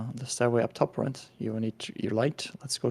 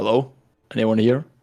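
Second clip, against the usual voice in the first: booming, very loud, amplified-sounding voice; 8 dB louder than usual. A player's character magically amplifies their voice to call out, booming loud voice. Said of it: "make my voice booming and louder".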